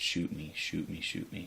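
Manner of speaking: ordinary talk, nothing marked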